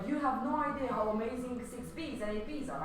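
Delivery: ordinary delivery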